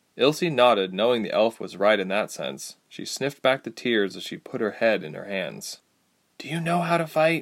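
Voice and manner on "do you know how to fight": quiet, higher pitch. Ilse asks the elf Ladala a question, quietly. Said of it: "Ilse asked quietly".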